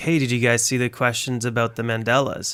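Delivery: ordinary delivery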